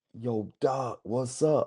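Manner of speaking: very slow, teasing, poking-fun mocking tone. Retelling a call with a young client, mocking the client. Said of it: "I'm gonna try to mock him a little bit".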